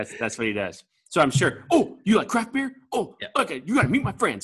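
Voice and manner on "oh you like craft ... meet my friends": excitable put-on voice, pitched higher. Imitating an excitable acquaintance meeting someone: Steve Seitner impression. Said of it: "my Steve Seitner impression".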